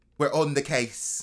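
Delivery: terrible fake English accent, badly put on. Telling a ghost story, voicing the English Ghostbusters in a terrible English accent. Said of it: "that was a terrible accent".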